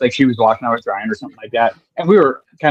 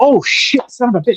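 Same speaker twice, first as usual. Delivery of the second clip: put-on, sudden, blurted, very high exclamation; 10 semitones higher than usual. Speaker retelling his own realization while walking away, retelling a sudden exclamation. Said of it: "I'm like".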